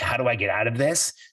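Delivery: ordinary talk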